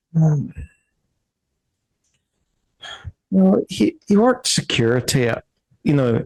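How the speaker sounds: halting Irish lilt drifting in and out. Voicing a character describing her husband's job: slipping into Irish accent. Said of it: "I'm going all Irish".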